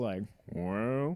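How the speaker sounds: put-on drawling Southern accent. Describing a man a woman was talking to, imitating his slow Southern drawl. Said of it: "he had a slow Southern drawl".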